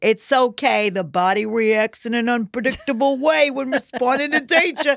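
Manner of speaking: put-on New Jersey accent, done badly, rough. Retelling what the instructor said to make a joke of it, New Jersey accent. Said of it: "That's my New Jersey accent".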